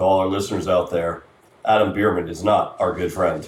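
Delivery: put-on documentary narrator voice. A co-host turns to address all the listeners out there; narrator voice. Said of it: "here's where I use my narrator voice".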